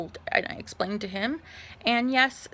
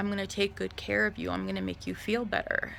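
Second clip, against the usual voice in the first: fast, very creepy-sounding put-on voice; 4 dB quieter than usual. Recounting a man who rubbed the speaker's shoulders, imitating a creepy voice. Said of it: "just imagine it like the creepiest sounding voice".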